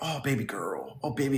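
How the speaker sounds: cringe-worthy, sarcastic, cringey tone. Imitating how she talked to viewers in her video: imitating her cringey tone. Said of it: "she'd be like".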